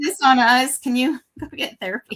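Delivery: talking through laughter. Quoting characters who talk back to their writer, laughing while talking. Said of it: "Sorry, I'm, I'm laughing".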